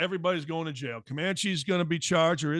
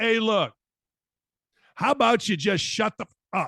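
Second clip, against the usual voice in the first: raised, angst-filled, exasperated voice; 5 semitones higher, 6 dB louder than usual. Showing someone what they simply need to say to idiots, imitating the angst in his voice. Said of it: "with the angst that he said it in his voice".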